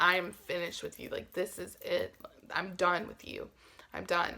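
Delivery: bawling, tearful, crying-your-eyes-out outburst. Retelling getting out of the car, imitating herself bawling. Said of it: "I'm bawling, I'm crying my eyes out, and I'm like".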